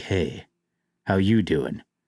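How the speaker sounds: mock smoldering voice. Acting out someone eating food sexily: put-on smoldering flirt voice. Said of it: "they're all smolder guys".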